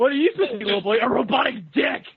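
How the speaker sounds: pretend shouting. Playing a Halloween costume that talks to a little boy: mock screaming costume. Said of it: "It screams everything he says".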